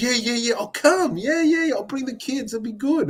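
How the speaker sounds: mock, very high, way over-the-top excited babble. Retelling a morning encounter, the speaker imitates Bo Ryan being way over-excited. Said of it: "Way over the top, way excited".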